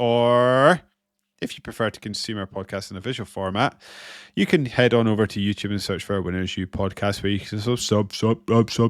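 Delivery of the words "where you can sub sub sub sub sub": stuttering, stammering Scottish accent. Podcast host plugging the show's YouTube channel, in a stuttering Scottish accent. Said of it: "That's my Scottish accent".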